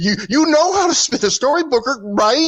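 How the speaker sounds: put-on taunting tone. Retelling a line Vic said to Booker: imitating Vic taunting. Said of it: "like it was like a taunt or like a begging him".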